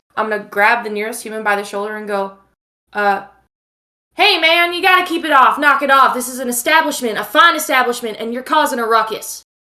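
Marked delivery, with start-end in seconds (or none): 4.2-9.4 firm, no-nonsense, stern, loud raised voice. Playing a character grabbing a rowdy human by the shoulder: stern raised voice. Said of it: "I'm gonna raise my voice".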